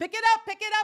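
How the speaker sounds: loud, high-pitched, impatient yelling.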